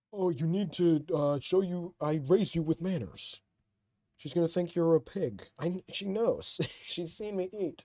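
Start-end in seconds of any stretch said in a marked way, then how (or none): 0.2-5.5 put-on parent voice with a lecturing tone. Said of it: "That's what, like, my stepmom and my dad would say".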